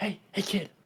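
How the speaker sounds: hushed, soft, beckoning whisper. Voicing a figure whispering to Fog from an alleyway: whisper. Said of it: "you hear a whisper going".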